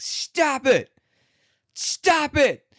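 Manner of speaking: acted, shrill, high, increasingly furious shouting. Retelling a woman yelling at a bear that won't stop, imitating an angry yell. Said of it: "she keeps getting madder and madder".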